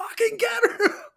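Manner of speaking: very high, loud, all-out screaming. Retelling jumping off the couch during a fight on a show, re-enacting screaming at the TV. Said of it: "like screaming at my T V".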